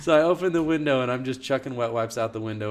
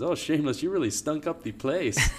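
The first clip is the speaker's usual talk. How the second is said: teasing, put-on Spanish accent, pitched up; 5 semitones higher than usual. Retelling what a man at church always says to him, in a put-on Spanish accent. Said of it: "He talks with this like Spanish accent".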